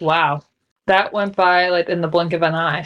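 plain

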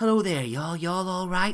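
warm, drawing-in voice. Imitating how Tabitha Brown opens every video: soft inviting Tabitha Brown voice. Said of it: "in this real soft, inviting".

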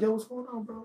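gentle, soft voice. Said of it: "the guidance counselor approach".

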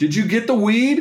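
very high-pitched yell hollered out to carry far. Retelling how a friend yelled from across the park, imitating a yell. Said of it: "just yells out".

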